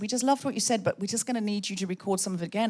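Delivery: ordinary talk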